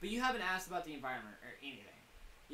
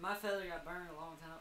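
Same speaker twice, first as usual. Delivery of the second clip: put-on southern US accent slipping in unintentionally. Playing Monroe, the speaker keeps slipping into a southern accent. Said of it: "I keep doing it".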